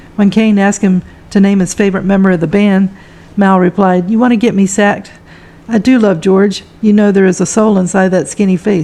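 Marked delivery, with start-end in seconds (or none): none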